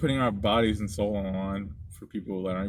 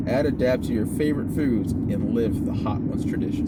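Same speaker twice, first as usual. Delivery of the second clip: ordinary talk, nothing marked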